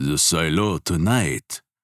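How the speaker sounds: alluring, seductive, suggestive. A man outside a bakery leans toward a woman and asks her, seductive. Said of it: "asks seductively".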